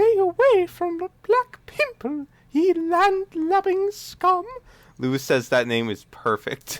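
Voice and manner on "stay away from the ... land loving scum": put-on very high, airy, breathy falsetto female voice. Retelling how someone voiced a character, in a breathy falsetto lady voice. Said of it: "does like a breathy falsetto lady voice. Like".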